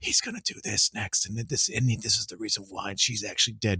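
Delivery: leaned-in, hushed, half-whispered aside. Retelling leaning over to a friend at the theater: imitating own past half-whisper. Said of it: "I'd lean over and whisper".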